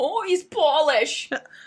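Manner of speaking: heavy, strong Minnesota accent. Responding when a co-host says the man in his story is Polish: really Minnesotan accent. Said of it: "I don't know why I said that in like a really Minnesotan accent".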